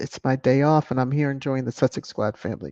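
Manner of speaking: ordinary talk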